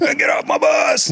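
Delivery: acted, very high, raspy, drawn-out drill-instructor screaming. Retelling how a big guy got on the bus: imitating a screaming drill instructor. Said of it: "starts screaming at you".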